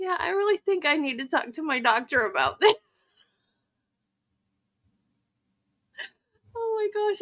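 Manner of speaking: talking through laughter. Telling how the live stream started late, laughing while talking. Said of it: "I can't stop laughing".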